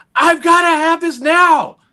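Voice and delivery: put-on high, drawn-out, thrilled child's shriek. Retelling running to his mom as a child: imitating himself screaming as a child.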